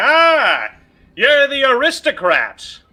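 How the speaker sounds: too-loud, very high, very slow, swooping, drawn-out. Speaking in character, turning to greet someone: saying the line too loud. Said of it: "we should probably keep that a little bit quieter".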